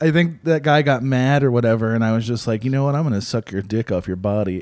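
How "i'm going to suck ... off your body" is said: low, quiet, plain, matter-of-fact delivery. Speaker retelling what they said to a guy who got mad, retelling a matter-of-fact line. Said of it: "when you just say it matter of fact".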